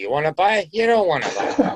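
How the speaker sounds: high, swooping New Jersey way of talking. Describing their way of selling, the speaker slips into a jersey accent. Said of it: "And that comes out Jersey accent".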